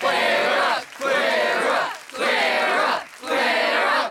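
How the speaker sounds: loud yell. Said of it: "Maybe they were yelling to get her off".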